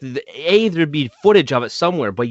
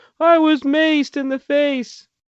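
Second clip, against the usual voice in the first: play-acted sniffling, crying, very high, very slow; 12 semitones higher than usual. Retelling a woman who says she was maced, imitating someone crying and sniffling. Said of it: "she's like crying and sniffling".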